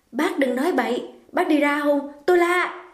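sharp, high, fearful, frightened snap. A young woman cuts off a man's advances, snapping in fear. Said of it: "Nương hồi hộp lo sợ, nạt ngang".

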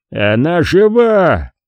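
insistent cry, жива stretched. A man staggers into the middle of the room and shouts, yelling at the top of his lungs. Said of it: "заорал Харрисон во все горло".

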